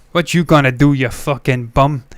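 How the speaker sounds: put-on Brooklyn accent. Joining in after another speaker's Home Alone quote, trying a Brooklyn accent. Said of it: "That sort of thing of that".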